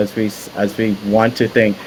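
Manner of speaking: plain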